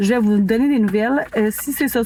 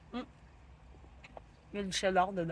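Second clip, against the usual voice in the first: speaking while chewing, mouth full, quieter; 19 dB quieter than usual. Taste-testing a sandwich, talking with mouth full. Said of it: "C'était pas poli parler la bouche pleine".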